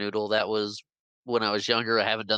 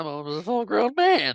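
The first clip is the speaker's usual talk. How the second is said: put-on cracking voice, higher and louder; 9 semitones higher, 4 dB louder than usual. Repeating a movie character's line to the other speaker: imitating a voice crack. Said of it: "his voice cracks a little bit".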